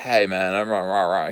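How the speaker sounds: grouchy, angry, complaining grumbling bear voice. At a bar, Grumpy Bear won't shut up, in a grumbling Grumpy Bear voice. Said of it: "He's he's grumbling".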